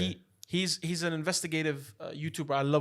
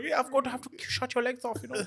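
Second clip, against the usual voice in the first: high, put-on German-accented officer voice; 8 semitones higher than usual. Imitating the German-dubbed cartoon: Winnie the Pooh as a Gestapo officer. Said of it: "why does Winnie sound like a Gestapo".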